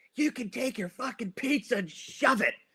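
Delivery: acted-out, furious, pissed-off tone, pitched very high. Telling a story about a couple arguing, voice the wife, imitating an angry wife. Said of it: "the wife gets all pissed".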